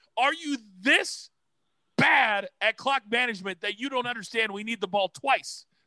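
acted screaming. Remembering watching a football game, retelling screaming at the tv. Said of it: "I remember screaming at the TV going".

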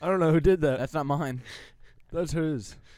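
high, loud, mocking put-on voice.

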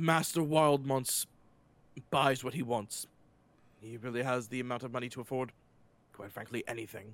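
heavy sigh, tired tone. A character answers how the statue got out of italy, weary reply with a sigh. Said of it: "He heaves a big sigh and he goes".

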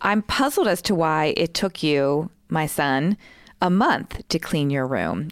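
ordinary talk, nothing marked

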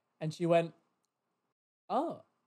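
plain

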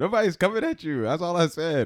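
laughing near-yell.

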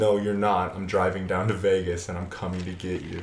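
ordinary talk, nothing marked

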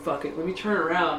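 usual speaking voice

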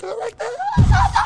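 very high, slow, squeaky put-on little princess voice.

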